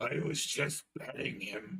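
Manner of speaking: slow, drawn-out delivery. Quoting an actor's movie line: Jackie Earle Haley voice. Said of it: "hearing Jackie Earle Haley go".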